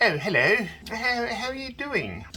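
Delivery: put-on very high, squeaky voice in a British accent. Acting out people greeting after the UK variant: squeaky Hubert Dunsley British accent. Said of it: "after they had the U K variant, they go".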